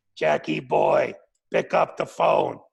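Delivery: low, rough, gravelly rasp. Telling how he heard a man call out to him, in a gravelly voice. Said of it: "he had that gravelly voice".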